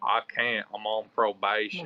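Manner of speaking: put-on slow Southern American accent. Retelling Trey's refusal to go head up, imitating Trey's Southern accent. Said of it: "He had a Southern accent".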